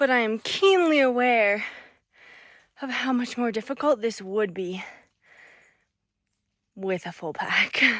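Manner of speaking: breathing heavily. Climbing a trail while recording, speaking out of breath. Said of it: "I'm still out of breath".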